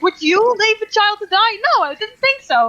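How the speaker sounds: slow, high shouting. Riding into town in character, shouting at a random passerby. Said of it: "shout at a random passerby".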